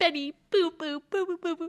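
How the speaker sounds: put-on high-pitched baby-talk voice. Describing a character's scheming habit, in Andy Anderson's baby voice. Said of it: "her baby voice when she's like".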